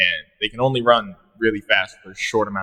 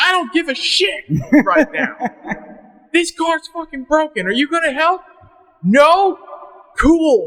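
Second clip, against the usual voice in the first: put-on fed-up angry yell, pitched very high; 4 dB louder than usual. Speaker retells answering a neighbor while pushing a broken car, retelling a yell. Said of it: "I felt great after yelling at him".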